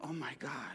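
very soft, hushed, awed voice.

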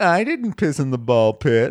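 mock-feeble, weak, limp voice. Contrasting another person's denial with their own, imitating a weak denial. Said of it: "Here's how he said it".

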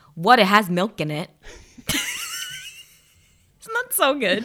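put-on speaking with Long Island accent. Retelling how her mom talked to her picky sister, imitating mom's Long Island accent. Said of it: "in her best Long Island accent".

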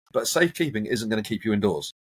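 ordinary delivery

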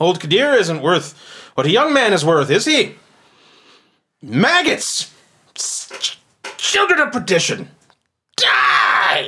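raging, high, loud shout, building in fury. Voicing a merchant who lunges with a dagger: furious shouting. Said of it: "his voice begins to get louder".

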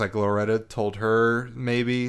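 ordinary talk, nothing marked

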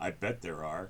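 hushed, low muttering under the breath. Retelling what another person muttered in reply: retelling a mutter under breath. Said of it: "Pete goes under his breath".

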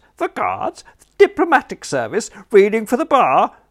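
very high, very loud, swooping falsetto. A character imitates an inquiring friend asking after his nephew, in falsetto. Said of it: "giving an imitation of an inquiring friend with, for some reason, a falsetto voice".

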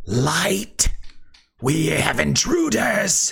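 high, rough, hissing demonic voice. Game master voicing a shadow demon looking toward a player character, hissing shadow demon. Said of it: "it's hisses".

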